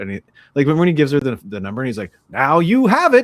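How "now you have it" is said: hammy daytime radio voice, very high, loud, drawn-out. Retelling what a guy said as he gave her the number, daytime radio voice. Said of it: "giving the most like daytime radio voice actory performance".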